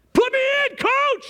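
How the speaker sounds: high, eager yelling. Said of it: "We all need to be yelling at him".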